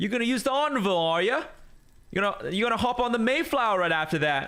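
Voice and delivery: high, mocking put-on English accent.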